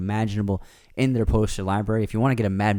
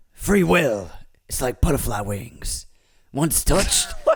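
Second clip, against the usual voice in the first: animated actor voice, wide swooping pitch, big; 5 semitones higher than usual. Quoting a movie line for a guessing game: Al Pacino impression. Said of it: "that's your Pacino impression".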